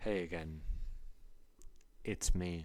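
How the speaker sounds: very soft, breathy, barely voiced hushed whisper. Greeting someone again at the start, whispering. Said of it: "Why are you whispering?".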